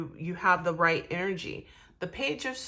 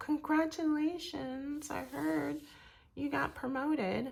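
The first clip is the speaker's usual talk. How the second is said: insincere, fake-friendly voice, high and soft; 8 semitones higher, 8 dB quieter than usual. During a reading, demonstrating a fake friend getting in touch, fake friend voice. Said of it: "That's my fake friend voice".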